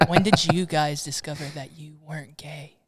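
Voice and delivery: hushed whisper. A host asks the guests a personal question, whispering. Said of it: "Why are we whispering?".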